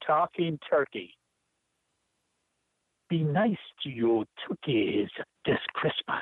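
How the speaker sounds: put-on Jamaican accent. Reading a poem aloud on request: Jamaican accent. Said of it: "I use my best Jamaican accent".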